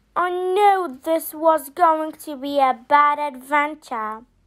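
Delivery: plain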